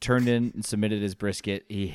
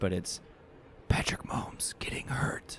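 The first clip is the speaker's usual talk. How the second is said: hushed, soft, breathy whisper; 2 semitones lower, 8 dB quieter than usual. Naming a fear she doesn't want to say out loud: whispering. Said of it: "so I'm gonna just whisper it".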